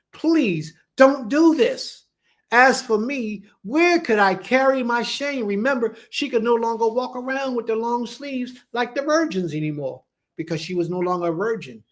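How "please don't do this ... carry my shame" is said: imploring, pleading, begging voice. Retelling a sister's plea to her brother: imitating a pleading woman. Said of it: "she's begging".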